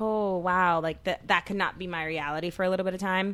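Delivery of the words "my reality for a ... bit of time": ordinary talk, nothing marked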